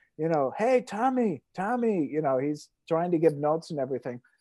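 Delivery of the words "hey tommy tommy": high-pitched yell, calling out. Retelling a yell at Tommy from the stands: imitating someone yelling. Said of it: "is yelling at Tommy from the stands".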